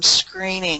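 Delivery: "screening" stressed with a falling tune. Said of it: "emphasis on that word screening".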